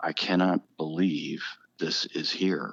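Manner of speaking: put-on tearful voice. Retelling what a visitor said at the life-size ark: imitating someone in tears. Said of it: "the one lady was just in tears".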